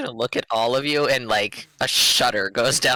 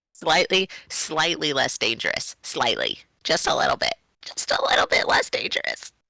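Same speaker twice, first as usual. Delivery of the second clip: strange, warped, odd put-on glitchy voice; 4 semitones higher than usual. Talking with others, repeating a point in an odd put-on voice. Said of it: "I don't know where that voice came from".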